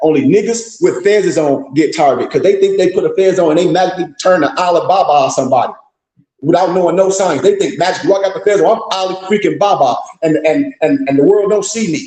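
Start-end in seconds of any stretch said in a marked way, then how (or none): none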